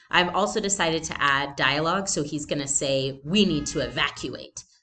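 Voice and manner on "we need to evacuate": very serious, grave voice. Showing a character's planned line of dialogue: very serious voice. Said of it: "in a very serious voice".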